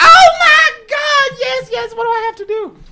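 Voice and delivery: put-on very high, shrill, very loud drunken woman's squeal. Retelling a call, quoting the woman's reply while imitating a drunk woman. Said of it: "She's very inebriated".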